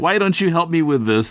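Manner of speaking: put-on, high, brash, pushy American yelling. Imagining coming in and demanding help in english: imitating a brash american yelling. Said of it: "like some brash American yelling".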